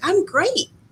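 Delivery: very high, squeaky, chirpy woman's voice. Retelling how a woman answered a greeting: imitating her high voice. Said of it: "her voice was so high".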